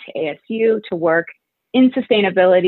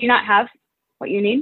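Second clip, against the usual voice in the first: put-on compassionate, nurturing, guiding tone; 4 semitones higher than usual. Retelling what a man asked the speaker, imitating a compassionate tone. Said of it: "with all compassion".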